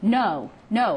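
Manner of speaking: ordinary talk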